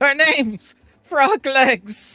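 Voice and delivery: shrill, drawn-out, very loud, very high pained scream. Voicing a foe who is electrocuted and dying: crying out while electrocuted. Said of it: "just cries out and says".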